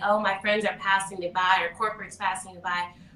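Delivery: ordinary delivery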